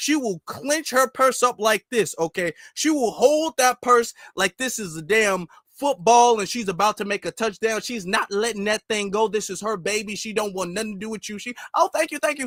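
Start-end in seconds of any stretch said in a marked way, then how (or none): 11.8-12.5 mimicked rushed fast speech, higher. Imitating a woman clutching her purse: imitating a woman talking really fast. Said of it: "She talks really fast".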